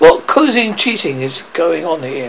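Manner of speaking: plain reading voice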